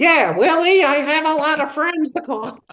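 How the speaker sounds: squeaky, very high voice. Retelling a rehearsal reader's line: imitating a high squeaky voice. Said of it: "And she'd go".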